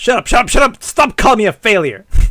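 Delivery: loud, high, furious angry yelling.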